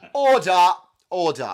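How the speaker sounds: very loud, high, full chest voice. Asked to hear it again, calling order in full chest voice. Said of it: "I'm using my full chest voice on that".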